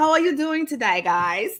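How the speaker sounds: high-pitched put-on British accent for show. Greeting the viewers, put-on british accent. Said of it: "I have to bring my British accent out".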